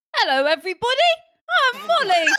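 very high, loud, put-on English accent. Showing everybody the accent used in improv; fake English accent. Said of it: "This is my English accent".

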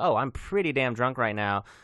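normal talking voice

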